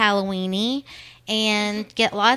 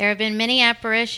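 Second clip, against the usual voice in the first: usual speaking voice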